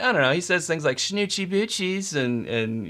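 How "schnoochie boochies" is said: put-on stoner slacker voice, higher. Answering a request to show a Jay impression: Jay impression. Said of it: "tell me your Jay impression".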